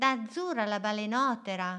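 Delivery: plain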